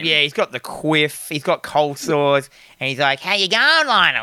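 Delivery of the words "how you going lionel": put-on, pitched-up, gross, creepy uncle voice. Describing the film's Uncle Les to another speaker: Uncle Les impression. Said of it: "he speaks like that".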